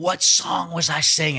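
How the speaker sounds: furious, high, heated shouting. Retelling what a man yelled after walking toward him, retelling a yell. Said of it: "starts yelling".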